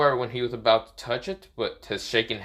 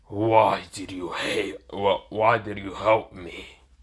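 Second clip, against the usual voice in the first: angry voice trying to sound scary; 3 semitones lower than usual. Recounting a crossover scene, Finral speaking to Naruto, Finral's put-on mad, scary voice. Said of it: "this kind of mad voice, and the same time trying to be scary".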